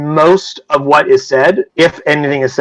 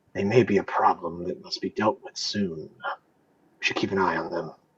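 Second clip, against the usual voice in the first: very hushed, very low half-whisper; 9 semitones lower, 16 dB quieter than usual. Narrator voices a woman half-whispering her reply to a man, very low hushed half-whisper. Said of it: "whisper to the other in a very, very low, hushed tone".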